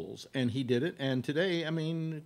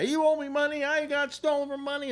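mock very high, shrill, loud, unhinged raving screaming; 14 semitones higher, 5 dB louder than usual. Speaker recounting a man nearby screaming at another man, imitating a man yelling. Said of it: "yelling and screaming at the guy".

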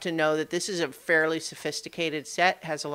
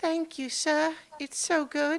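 put-on tiny, girlish, very high little girl voice; 11 semitones higher than usual. Narrating, voicing an unseen feathered creature that sounds like a little girl: little girl voice. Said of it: "what sounds like a little girl going".

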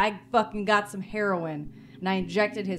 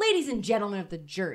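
put-on, mocking, super insincere lawyerly attitude. Speaker imagines a woman addressing the jury, mocking super bullshit attitude. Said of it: "with this super bullshit attitude".

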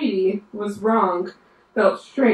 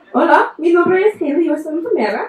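raised, pitched-up professional nurse voice in Spanish; 8 semitones higher, 5 dB louder than usual. Showing that she can sound like a nurse in spanish too: nurse voice in spanish. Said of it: "I can even sound like a nurse in Spanish".

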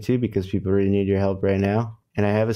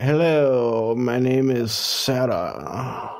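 put-on, mock-proper voice; 3 semitones higher than usual. Speaker teases her conversation partner's formal introduction, imitating Sarah's proper greeting. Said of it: "I'm doing a Sarah impression".

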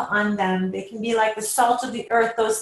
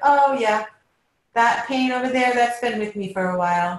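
offhand, casual and unbothered, nonchalant tone. Acting out how some people talk about their own pain: mock-nonchalant, imitating apathetic people. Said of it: "they just say it in a nonchalant way".

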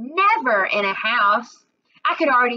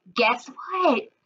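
excited, eager whisper, bursting with energy; 3 semitones higher than usual. Mama hurries to the car and speaks to Georgina; excited whisper. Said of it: "she whispered, real excited like".

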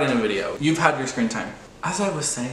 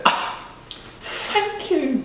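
very high, put-on British accent; 13 semitones higher than usual. Answering a worker's compliment, in a british accent. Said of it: "respond in a British accent".

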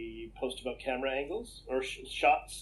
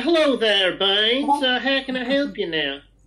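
put-on Alabama accent, higher and louder; 10 semitones higher, 12 dB louder than usual. Retelling a call with a tech support person: imitating an alabama accent. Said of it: "I love your accent".

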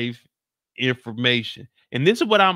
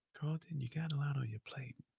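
put-on too-calm voice, quieter; 18 dB quieter than usual. Retelling Spencer talking to Carlton: imitating Spencer's too-calm voice. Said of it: "Spencer is too calm".

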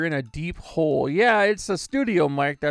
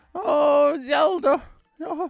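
put-on old lady voice, much higher, slower; 10 semitones higher than usual. Showing the voices used to spice up a game, as Impa: old lady voice. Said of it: "the old lady voice".

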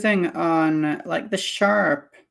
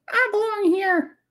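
very high puppet-like voice. While painting, the speaker slips into a voice: Pinocchio voice. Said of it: "It's my Pinocchio voice".

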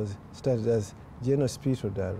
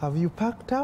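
mock sweet, nice, friendly voice, very high; 11 semitones higher than usual. Retelling what they said on opening the residence door, in a nice friendly voice. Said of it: "I said in a very nice, friendly voice".

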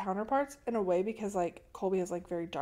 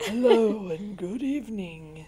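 spooky, creepy voice, louder; 6 dB louder than usual. Greeting listeners on a horror podcast, joking: creepy voice. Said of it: "What if we were creepy like that?".

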